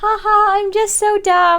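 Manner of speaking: very high, cute, dopey, drawn-out ditzy voice. Mocking a game character meant to be cute and dopey: mocking a dopey character. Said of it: "She's supposed to be like".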